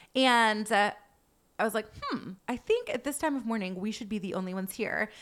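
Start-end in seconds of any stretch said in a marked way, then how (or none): none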